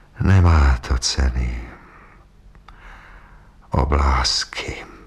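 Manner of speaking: hushed whisper. The old man, staring toward Petřín, answers Mr. Šajvl: whispered. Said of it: "Pak zašeptal".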